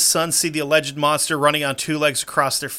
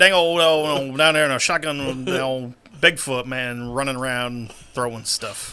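put-on mumbling Texas drawl. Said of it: "they did talk like a town full of boomhowers".

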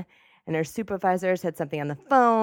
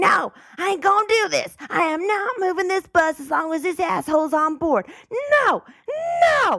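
very high-pitched, shrill, screaming tirade; 12 semitones higher, 5 dB louder than usual. Telling a Chicago bus story, acting out the driver: retelling a driver's screaming. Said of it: "started screaming".

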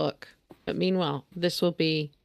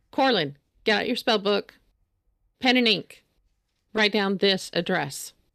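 short, clipped, curt delivery; 3 semitones higher, 3 dB louder than usual. She tells corlin what to write down while drawing, in clipped tones. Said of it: "she's in clipped tones".

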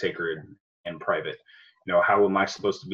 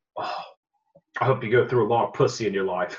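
put-on Australian accent, comedian style; 3 semitones higher than usual. Retell a stand-up's bit about holding his newborn son, imitating an Australian accent. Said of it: "he does it with his accent. He's Australian".

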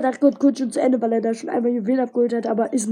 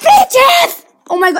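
freaking out excitedly, much higher and louder; 10 dB louder than usual. Opening two legendary Brawl Boxes, the speaker is freaking out excitedly. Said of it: "Sorry, dass ich so ausraste".

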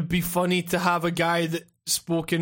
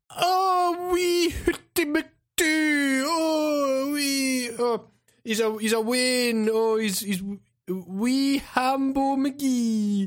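mock Scottish accent, much higher, slower; 7 semitones higher than usual. Mimicking what Americans always say about Scottish accents, in a mock Scottish accent. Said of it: "Everyone in America always goes".

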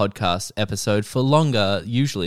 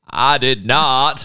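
loud, raised, creaky politician voice; 4 semitones higher, 7 dB louder than usual. Doing a Clinton impression for the podcast: Bill Clinton impression. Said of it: "I do wanna do my Clinton".

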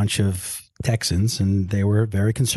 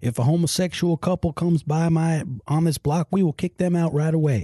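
put-on pitched-up, local Texas accent; 8 semitones higher than usual. Recounting what neighbors on a tv show said on camera, doing a neighbor impression. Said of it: "that was an excellent impression".

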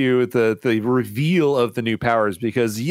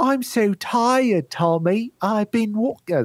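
bad, clumsy Australian accent, high and slow; 9 semitones higher than usual. Describing a confusing show sequence, quoting a tired character as Pink Ranger, bad Australian accent. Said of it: "she's got like an Australian accent".

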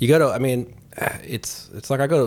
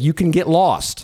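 play-acted joking, sarcastic comeback, pitched up; 6 semitones higher, 4 dB louder than usual. Retelling answering a man who kept coming back, with a sarcastic quip. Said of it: "I was being sarcastic".

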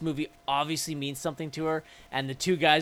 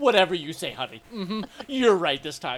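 play-acted, dripping with sarcasm, dismissive; 3 semitones higher than usual. Retelling a movie character's line: imitating a sarcastic line reading. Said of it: "It's the most sarcastic".

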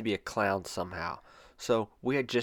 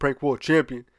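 very loud delivery, pitched much higher; 5 semitones higher, 8 dB louder than usual. Retelling what he would say in a shoe store: retelling a very loud line. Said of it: "he would say it so loud".

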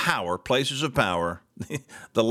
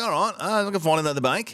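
imitation Australian accent; 5 semitones higher than usual. Retelling what a man said after his bank closed his account, put-on Australian accent. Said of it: "I slipped into Australian, got right out of my British".

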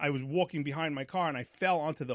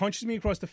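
normal talking voice

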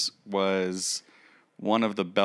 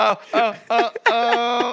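put-on shouting, raised pitch and volume; 7 dB louder than usual. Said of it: "they're all yelling".

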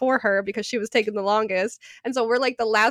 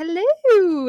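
play-acted, chipper, upbeat, high, raised voice; 8 semitones higher, 5 dB louder than usual. Retelling a mother's phone greeting: imitating Mom's chipper tone. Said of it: "she's all chipper".

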